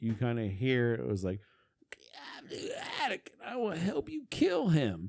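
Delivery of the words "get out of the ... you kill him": very high, raspy ghostly spirit voice. Retelling a recorded spirit voice heard in an attic: imitating a deep raspy voice. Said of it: "in a deep, raspy voice".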